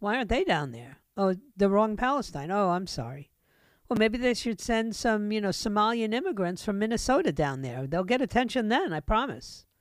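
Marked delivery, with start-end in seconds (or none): none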